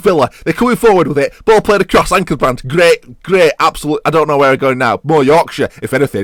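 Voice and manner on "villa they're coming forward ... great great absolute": Manchester, Mancunian accent. Commentating on a match as Villa come forward, in a put-on Mancunian accent. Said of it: "I've adopted a Mancunian accent as they come forward".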